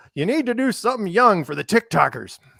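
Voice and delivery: put-on old man voice, very high pitched. Retelling what DJ once asked: imitating DJ as an old man. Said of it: "my voice in your head is an old man".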